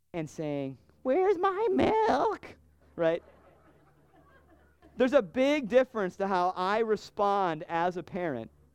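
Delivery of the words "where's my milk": put-on high, cracking voice like a young teen. A parent imitates his child asking for milk, cracking voice like a 13-year-old. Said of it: "You like how my voice was cracking there, like a 13-year-old?".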